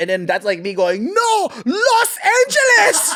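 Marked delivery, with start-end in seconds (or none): 1.1-3.1 put-on Chinese accent, pitched very high. Retelling own past reply to being asked if American: Chinese accent. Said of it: "With, with a Chinese accent?".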